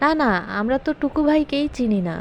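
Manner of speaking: ordinary delivery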